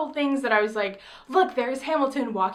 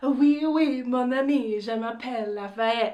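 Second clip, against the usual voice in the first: slow, put-on French accent. Recalling a stage performance, the speaker quotes an actor's line, imitating Lafayette's French accent. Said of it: "he goes into it in his French accent".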